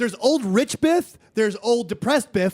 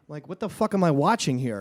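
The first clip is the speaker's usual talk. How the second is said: normal talking voice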